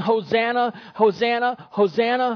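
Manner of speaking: plain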